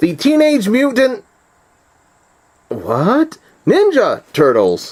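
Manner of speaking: stunned, high, drawn-out astonished announcer voice. Retelling a trailer narrator reading a title, imitating an astonished announcer. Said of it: "it seems like he was astonished".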